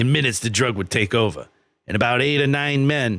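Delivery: put-on old Boston man accent. Reading a quote aloud as an old Boston guy: Whitey Bulger voice. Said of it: "this is Whitey Bulger".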